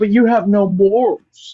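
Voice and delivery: slow, deliberate, plain accusing tone. Doing an impression of Django for a friend: Django impression. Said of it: "he always does the thing where he's like".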